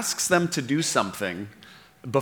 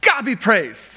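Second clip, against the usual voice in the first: loud, pitched-up voice with full gusto; 8 semitones higher, 5 dB louder than usual. Acting out the healed man coming back praising god, acting out loud praise. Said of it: "came back praising God in a loud voice".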